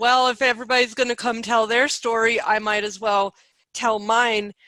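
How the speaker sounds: plain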